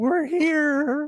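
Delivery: put-on very high, squeaky teen voice, drawn out. Recapping a story where Otto gulps after May's remark, squeaky teen Otto voice. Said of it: "say in probably a squeaky voice, teen voice".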